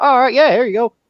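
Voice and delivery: very high put-on local Florida accent. Retelling how someone handed you a screwdriver, do them in a put-on Florida accent. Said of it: "you sit there and do that accent perfectly".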